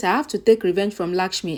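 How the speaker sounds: ordinary delivery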